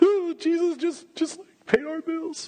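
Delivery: very high, slow, mock tearful sobbing. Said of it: "Dad, why are you crying?".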